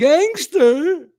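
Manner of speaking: very high, very loud, shrill, horrible-sounding squawk. Mocking how the other speaker says the word gangster: imitation of a friend saying gangster. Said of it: "That's how you say it every time you say it".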